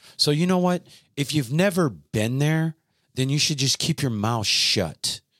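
mad outburst. Speaker venting about people commenting on an episode, getting worked up. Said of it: "sorry, I'm getting worked up".

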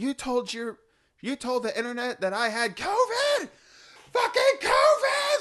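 very high, shrill, rising scream at full lungs. Retelling a video where a mom yells at her daughter: imitating Kellyanne screaming. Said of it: "screaming at the top of her lungs".

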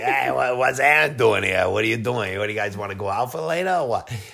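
put-on easygoing, casual, bantering tone in a Boston accent. Retelling how the speaker used to talk, in a Boston accent. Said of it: "In a Boston accent".

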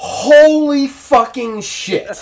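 very high, loud, shrill yell, drawn-out "holy". Retelling walking out into the bright summer day: imitating own yell.

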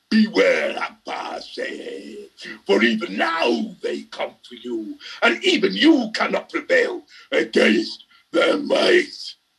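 menacing raspy growl, menace building. Reading a story, the narrator voices a survivor warning abbas, a rasping threatening growl. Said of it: "rasped in an increasingly threatening growl".

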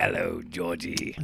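put-on, broad-ish Cockney accent. Voicing the sewer figure waving hello: Pennywise with a Cockney accent. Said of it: "I gave him a Cockney accent".

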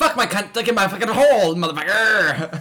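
very loud, drawn-out pirate-style roaring bellow. Acting out a crude example of saying off-the-wall things: sounding like a pirate. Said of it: "That sounded like a pirate".

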